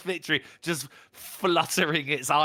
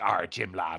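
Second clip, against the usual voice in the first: put-on classic theatrical stage pirate accent; 8 semitones lower than usual. Explaining where the classic pirate voice comes from: pirate voice. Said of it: "he did that on stage".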